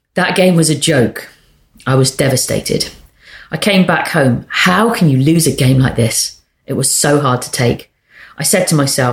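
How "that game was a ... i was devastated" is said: ordinary delivery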